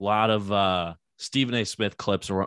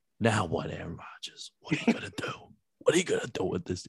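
soft whisper, close to the microphone; 5 dB quieter than usual. Retelling what someone said into the microphone: imitating someone whispering. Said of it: "he just whispers into the microphone".

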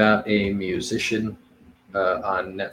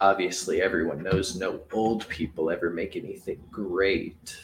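dry, laid-on sarcastic aside; 3 semitones lower, 9 dB quieter than usual. Reacting to a movie description about turning thirty: sarcastic tone. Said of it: "if you can hear my sarcasm".

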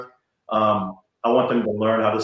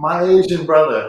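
mock excited, high, loud, far-carrying holler; 6 semitones higher, 5 dB louder than usual. Retelling spotting someone eighty yards away, reenacting a scream. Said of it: "And I screamed".

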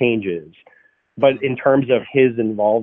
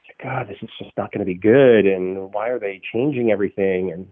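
whispering. Retelling how an unhappy actor complained during reshoots: imitating Paul whispering. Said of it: "kind of whispering to me or whispering to her".

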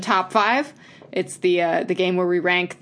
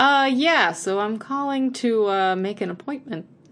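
put-on, extra polite telephone voice, higher pitch; 3 semitones higher than usual. Teasing a co-host about their phone manner, imitating them: extra polite phone voice. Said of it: "I get extra polite when I'm on the phone".

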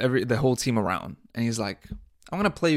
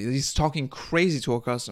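ordinary delivery

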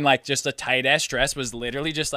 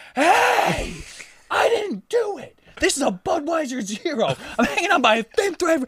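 mock very high, drawn-out shrieked screaming; 14 semitones higher than usual. Retelling an argument with a local woman, re-enacting screaming at her. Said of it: "I started screaming at this lady".

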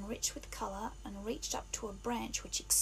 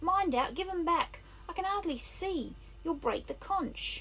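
terrified, very high shriek; 7 semitones higher, 3 dB louder than usual. A boy cries out as his glasses are snatched off his face, in a shriek of terror. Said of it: "His voice rose to a shriek of terror".

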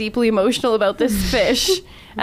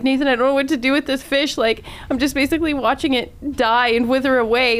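upset, tearful crying voice; 3 semitones higher than usual. Retelling a phone call to a brother: retelling crying on the phone. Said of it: "I call my brother and I'm like crying".

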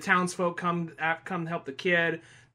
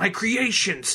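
evil mad scientist voice; 2 semitones higher than usual. Describing a comic's villain, acting out his line: stereotypical evil mad scientist voice. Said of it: "just a generic ass evil mad scientist guy".

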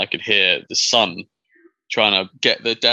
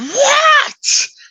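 re-enacted scream, much higher pitch, louder; 7 dB louder than usual. Recounting a man over the hill who screams at his son, retelling a scream. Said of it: "screams at his son".

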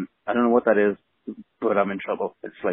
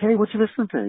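super enthusiastic and eager, pitched very high; 12 semitones higher than usual. Recounting dad seeing them listen to a record, imitating his super enthusiastic tone. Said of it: "he's like super enthusiastic about it".

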